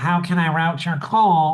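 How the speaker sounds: put-on nasal receptionist-style phone voice. Imitating how receptionists answer the phone: imitating a nasal receptionist. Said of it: "Why do they always sound like they're so nasal?".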